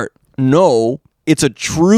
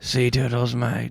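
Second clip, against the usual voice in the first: put-on pirate voice, lower and quieter; 4 semitones lower, 10 dB quieter than usual. Trying the impression again, too much teeth: Jack Sparrow voice. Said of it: "I got too many teeth".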